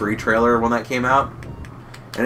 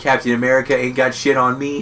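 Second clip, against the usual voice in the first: ordinary talk, nothing marked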